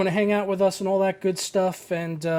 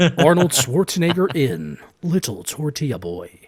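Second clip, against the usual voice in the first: movie trailer voiceover voice, lower pitch; 5 semitones lower, 4 dB louder than usual. Repeating the bit after being asked to do it again: movie trailer voiceover voice. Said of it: "That's pretty good, actually".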